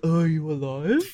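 dim, clueless movie-character voice. Retelling a movie scene, imitating a movie character. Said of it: "That was a really good impression".

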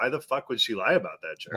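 ordinary delivery

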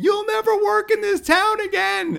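very high-pitched, shrill, loud yelling scream. Retelling what the manager yelled as the speaker walked out after quitting: imitating someone screaming. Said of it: "He's screaming".

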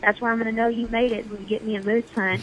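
put-on Southern American accent. Quoting his dad, who badly wants a Yukon moose hunt; dad's southern accent. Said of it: "I'm saying it in his southern accent".

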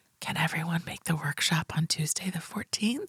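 very quiet, hushed, barely audible whisper. Reading out a listener's story about a quiet conference call: retelling a whisper. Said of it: "and I whisper".

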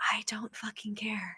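barely audible, very quiet hushed whisper. Retelling what a date said in the car: imitating a whisper. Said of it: "this man whispers".

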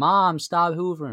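sudden high, loud shout.

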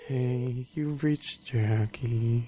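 low, gloomy, downcast sad voice. Describing a friend's voicemail greeting, putting on a mock-sad Eeyore voice. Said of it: "It's so Eeyore".

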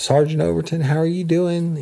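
put-on very high little girl voice. Retelling how Rodney greeted a sergeant, in a little girl's voice. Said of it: "he talked in a little girl's voice".

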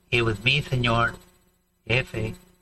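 slow, halting, with a pause before the name. Retelling how a man introduces himself, pausing before the name. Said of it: "Because he pauses between there".

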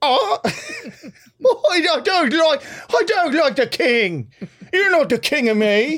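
put-on Irish accent, very high, slow, woman's voice. Imitating an Irish woman with a rolling pin at the coronation: imitating an Irish woman. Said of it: "an Irish woman in a dress".

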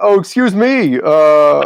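high, slow, drawn-out, snooty, pretentious know-it-all voice. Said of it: "then I look like a jerk".

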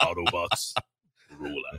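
deep, dropped robot-leader voice. Doing a quick impression after another speaker mentions Optimus Prime: Optimus Prime voice. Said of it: "sounded like the Optimus Prime version".

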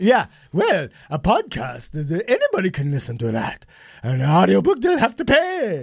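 mock regal, queenly voice. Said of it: "she talks like a queen".

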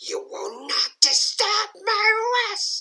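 hissed, whispering. Voicing a figure who demands you leave the tower, in a hissing whisper. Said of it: "it hisses".

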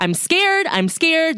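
very high, deliberate, drawn-out, loud pleading voice. Retelling a man's words to officers during a traffic stop: imitating someone speaking very loudly. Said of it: "very loudly".

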